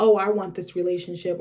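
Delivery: ordinary delivery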